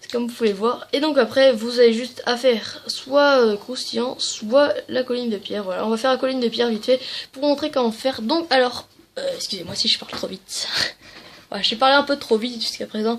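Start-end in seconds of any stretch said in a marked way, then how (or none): 9.2-10.7 soft, apologetic whisper. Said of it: "Voilà, je respire".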